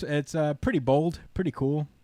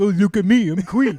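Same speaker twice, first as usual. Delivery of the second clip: mocking young child voice, louder; 6 semitones higher, 6 dB louder than usual. Mocking how seven-year-olds react to a character: mocking seven-year-old voice. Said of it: "7-year-olds like".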